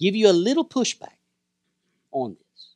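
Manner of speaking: soft, gentle voice. Offering a listener a little pushback about reading scripture, gently. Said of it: "I'm saying gently".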